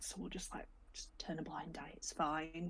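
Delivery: hushed, soft conspiratorial whisper.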